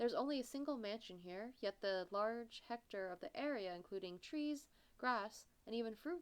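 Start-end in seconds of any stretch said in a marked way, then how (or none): none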